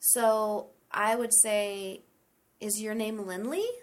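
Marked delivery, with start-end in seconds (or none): 2.6-3.6 pitch climbs at the end of Lindley. Example yes-or-no question, rising tone on Lindley. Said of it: "I used a rising tone".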